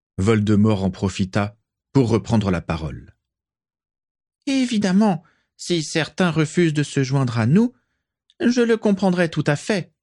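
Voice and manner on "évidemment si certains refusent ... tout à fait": sugary, silky, honeyed voice pitched well up. Speaking again to the two gathered clans, in a honeyed voice. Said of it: "dit-il d'une voix doucereuse".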